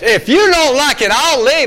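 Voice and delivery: very high, loud, defiant, in-your-face tone. Retelling a defiant girl's reply: imitating a defiant girl in my face. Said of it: "she'd get my face".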